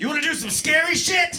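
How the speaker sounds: very high-pitched yell. Recounting a skydive, acting out the man he jumped with yelling into his ear. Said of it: "he just yells into my ear".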